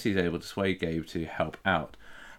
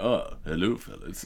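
laid-back, easy, casual in-character voice; 3 dB quieter than usual. Retelling a casual chat with a surfer named Gabe, in a George Takei voice. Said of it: "Gabe was played by George Takei".

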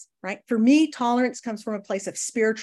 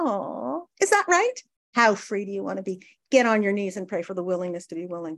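condescending, patronizing, talking-down tone. Retelling the sponsor patting the speaker's head: imitating a condescending tone. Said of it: "so condescending".

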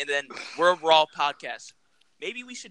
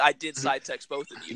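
usual speaking voice

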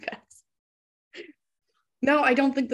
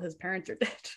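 very quiet, much softer aside. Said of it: "I say that very quietly".

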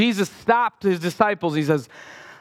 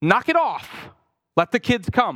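firm, stern, no-nonsense tone; 3 semitones higher than usual. Retelling a Bible scene, acting out Jesus firmly. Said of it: "I think he was pretty firm".

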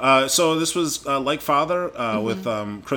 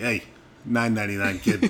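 put-on tough-guy Boston accent; 4 semitones lower than usual. Retelling what a woman said, in a tough-guy boston accent. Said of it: "When I'm doing the tough guy accent".

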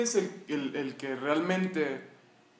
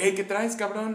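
bright, happy, cheerful, pitched up; 5 semitones higher than usual. Retelling how the psychologist greeted them: imitating a very cheerful greeting. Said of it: "bien feliz".

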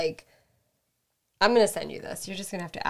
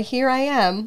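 ordinary talk

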